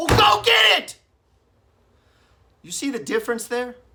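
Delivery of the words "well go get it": high, booming, drawn-out, raspy, rough scream. Answering an excuse about an empty trading account: screaming. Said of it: "you're just screaming".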